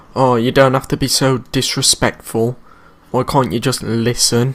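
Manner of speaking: normal talking voice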